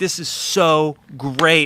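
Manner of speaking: put-on thrilled gushing, very slow and drawn out. Describing a man thrilled by a guitarist's playing, the speaker imitates his excitement. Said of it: "He's so excited".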